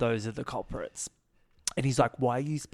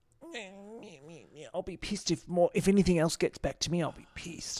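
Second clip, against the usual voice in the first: mock sulky, put-on sulking voice; 5 semitones higher than usual. Retelling how a reality show contestant sulks off: imitating Sean sulking. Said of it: "Sean sulks off".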